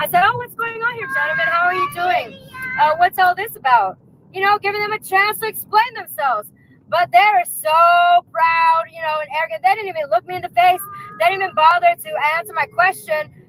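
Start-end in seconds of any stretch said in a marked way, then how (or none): 0.2-4.0 feigned innocent curiosity. Retelling approaching some men, pretending not to know: feigned innocent curiosity. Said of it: "I said in that voice, too".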